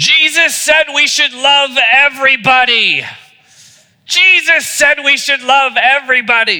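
high, loud mock scream at the top of his lungs.

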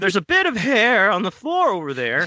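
put-on flustered, squeaky sing-song voice, pitched way up. Reading a man's line from a story aloud, in a put-on voice. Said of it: "what the fuck are you doing with this voice?".

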